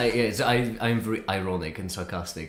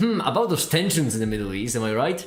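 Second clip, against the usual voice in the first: mock tongue-in-cheek earnest, ironic put-on serious tone; 3 semitones higher, 4 dB louder than usual. Retelling a typical icebreaker said on stream: retelling an ironic icebreaker. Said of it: "purely ironically".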